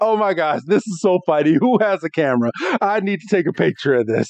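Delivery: play-acted talking while stifling laughter through words. Retelling a scene where Pikachu laughs at Ash on the ground, Pikachu holding back laughter. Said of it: "Pikachu is just holding back laughter".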